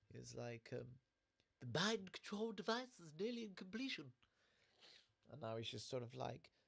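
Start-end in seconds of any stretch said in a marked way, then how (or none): 1.6-4.1 posh voice, pitched a touch higher. Showing how a cartoon character used to talk: posh Stewie Griffin voice. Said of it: "Stewie used to be more posh".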